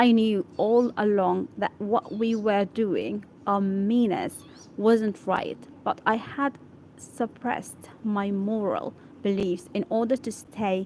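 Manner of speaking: ordinary delivery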